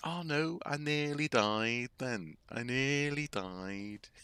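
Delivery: put-on Liverpool accent. Retelling what Graham said to new acquaintances, imitating Graham's Liverpool accent. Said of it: "hard actually to properly do his voice because because I'm not from Liverpool".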